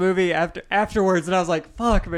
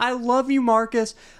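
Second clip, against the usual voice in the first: acted-out mock squealing; 3 semitones higher than usual. Retelling a gunfight scene and doing her line, imitating a squeal. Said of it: "She squeals out".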